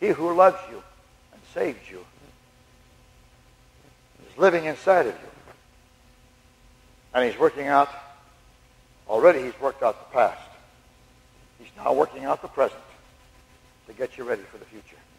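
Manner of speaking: tender. Speaking to listeners about God, asking to say it as tenderly as possible: tender. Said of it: "Can I say something as tenderly as I can?".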